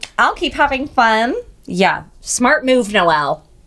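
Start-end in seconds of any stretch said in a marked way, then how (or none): 1.7-3.4 heavy sarcasm, mocking tone. Commenting on her own choice to keep seeing a man, sarcastic. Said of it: "she said sarcastically".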